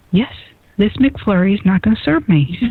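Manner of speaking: mocking put-on voice. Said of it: "I'm totally making fun of K J right now".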